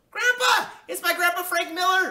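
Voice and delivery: shrill, very high shout at full volume. A child hears the front door open as Grandpa arrives, shouting. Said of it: "I shouted".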